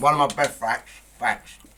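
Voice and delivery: loud, talking through a full mouth of food. Announcing a fact on camera while eating, talking with mouthful of food. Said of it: "it when you've not got a fucking mouthful of food".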